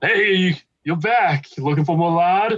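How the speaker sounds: put-on Jersey-accented voice. Narrating a scene, voicing the lard peddler greeting the group in a jersey accent. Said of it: "I forgot he had a Jersey accent".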